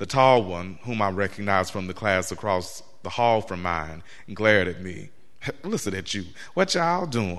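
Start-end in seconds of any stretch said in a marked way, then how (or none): 5.6-7.4 derisive put-on voice, very high, octaves up. A tall classmate mocks the narrator's way of talking, mocking high-pitched voice. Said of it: "in a voice pitched a few octaves higher".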